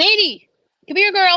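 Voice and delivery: very loud, high, shrill yell. Your dog is barking at the neighbor while you have your AirPods in; call her, yelling. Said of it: "didn't mean to yell in your ear".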